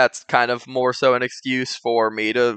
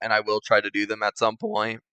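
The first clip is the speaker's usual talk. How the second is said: voice crack, quieter; 2 semitones lower, 5 dB quieter than usual. Speaking to viewers about possible future videos, voice cracking. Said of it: "ignore that voice crack".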